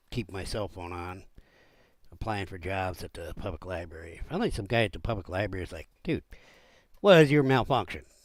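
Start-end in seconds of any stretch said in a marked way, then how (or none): 6.0-7.9 very loud, booming, barked drill-sergeant delivery. Retelling what a guy at the public library said to him, like a drill sergeant. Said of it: "I make him sound like a drill sergeant".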